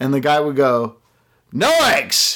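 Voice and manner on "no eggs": very high-pitched, angry retort. Retelling a late-night order refused at a donut shop: imitating an angry shout. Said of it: "Like, angrily".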